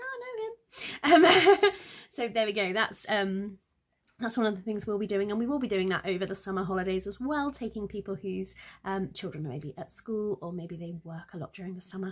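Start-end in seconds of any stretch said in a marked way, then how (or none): 0.0-1.2 high, delighted surprise with laughter. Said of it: "you'll be like".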